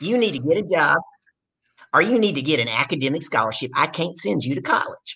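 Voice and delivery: put-on Southern accent. Retelling what dad said, in a put-on southern accent. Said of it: "My dad's got a really Southern accent".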